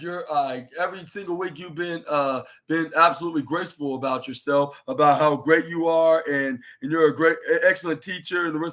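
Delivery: ordinary delivery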